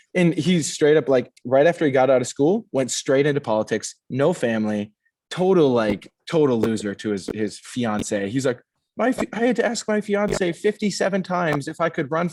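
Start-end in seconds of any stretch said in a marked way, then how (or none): 8.9-12.2 meek, unconfident, high, squeaky timid voice. Retelling what the candidate said about his fiance: imitating a high-pitched unconfident voice. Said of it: "the other guy with the high-pitched voice".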